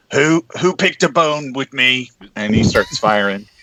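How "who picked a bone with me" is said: high, yelled battle cry. Game narrator voices a character with a rifle as he opens fire, yelling. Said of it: "he yells".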